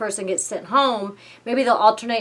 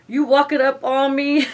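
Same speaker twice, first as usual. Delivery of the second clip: loud, pitched-up put-on New York accent; 5 semitones higher, 5 dB louder than usual. Sharing favorite quotes from a trailer, one said in the New York accent. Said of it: "another one with the New York accent".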